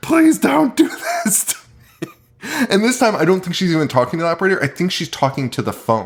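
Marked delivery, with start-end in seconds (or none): 0.0-2.1 high, desperate, pleading mock scream. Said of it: "and screaming".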